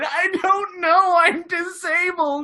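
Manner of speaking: very slow, high, fake tearful crying voice. Retelling a man who claimed someone stole his wheelchair: high-pitched put-on voice. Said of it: "high pitched voice the whole time".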